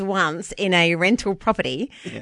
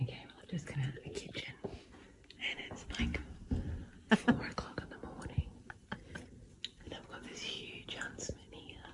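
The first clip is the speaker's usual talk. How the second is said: hushed breathy whisper, barely audible, very quiet; 6 semitones lower, 21 dB quieter than usual. Narrating into a phone at 4 a.m. about a huge huntsman, whispering. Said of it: "You can only just hear it because I'm whispering".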